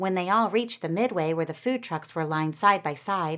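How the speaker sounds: plain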